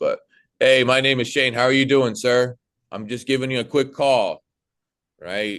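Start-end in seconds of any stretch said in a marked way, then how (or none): 0.0-4.4 mildly obnoxious, much higher. Demonstrating a sales call opening to a client, a little obnoxious. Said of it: "I'm a little obnoxious".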